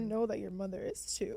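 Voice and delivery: on the verge of crying. Praising people who overcame a tough time, tearful. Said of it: "I was not expecting to cry".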